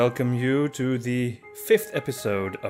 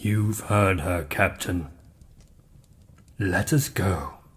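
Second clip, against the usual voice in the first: ghostly creature voice, lower and quieter; 4 semitones lower, 6 dB quieter than usual. A ghostly creature speaks to the captain, in a ghostly creature voice. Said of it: "a ghostly creature of unknown origin".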